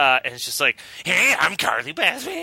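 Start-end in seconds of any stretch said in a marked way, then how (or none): 1.0-2.4 high, pitched-up, put-on little-kid voice. Retelling how a masked girl's voice changes: kid doing a Beavis impression. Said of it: "a little kid trying to do their impression of Beavis".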